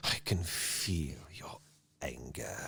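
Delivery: breathy, quiet, hushed, slow, dark villain voice. Discussing how a character talks, quoting him to show it: quiet villain line, not whispered. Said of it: "It's more of a quiet".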